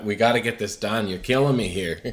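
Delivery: acted angry, frustrated tone. Describing a blooper reel where an actor gets mad at the laughing cast: mock-angry. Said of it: "he's getting mad".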